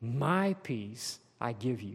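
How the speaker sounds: "my" stressed slowly and hard. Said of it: "Underline the word my".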